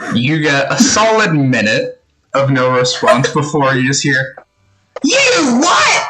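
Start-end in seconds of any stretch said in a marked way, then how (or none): 5.0-6.1 very high, outraged, furious outburst. Voicing the big sister answering a sending message: furious big sister reply. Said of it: "a mix and ramble of curses and how dare yous".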